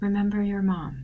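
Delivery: very soft, hushed, barely-there half-whisper. Crouching by a girl in character, saying: very soft half-whisper. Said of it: "very softly whispering".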